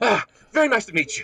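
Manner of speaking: very high, gushing, eager voice. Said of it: "It very enthusiastically".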